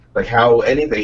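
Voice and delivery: ordinary delivery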